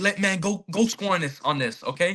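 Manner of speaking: put-on yell, egging others on. Retelling a football game's final seconds, yelling at the team: retelling a yell. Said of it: "I'm yelling at them like".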